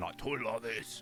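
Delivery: put-on proper hard Cockney man accent. Describing how his voice sometimes sounded, doing a hard Cockney man voice. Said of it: "I sounded like a proper hard Cockney man".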